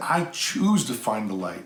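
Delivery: ordinary delivery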